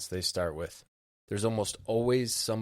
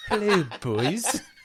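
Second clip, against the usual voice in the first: put-on very high-pitched, loud Canadian hoser accent; 12 semitones higher, 8 dB louder than usual. Trying a voice again after a first attempt, the speaker does a canadian accent. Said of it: "That's Canadian".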